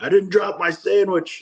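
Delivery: high, frightened yell.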